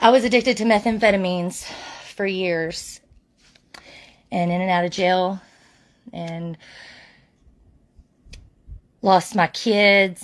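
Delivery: halting, choked-up voice breaking on the verge of tears. Speaker tells her own story to an audience, about to cry. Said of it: "and I'm going to cry".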